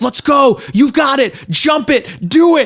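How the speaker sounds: high, hyped, excited cheering yell. Retelling a tense game moment, imitating own excited yelling at the screen. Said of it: "I was screaming, like".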